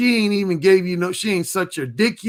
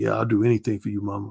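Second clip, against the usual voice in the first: put-on deep man's voice, lower and quieter; 10 semitones lower, 4 dB quieter than usual. Acting out a man's reply on a phone call, in a put-on deep voice. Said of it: "He had this like deep voice".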